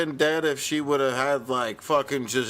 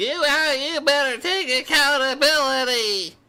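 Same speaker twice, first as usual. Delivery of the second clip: very high-pitched, goofy, dorky voice; 12 semitones higher, 4 dB louder than usual. Speaker mocks a man demanding accountability: imitating a dorky voice. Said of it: "He's a very dorky voice".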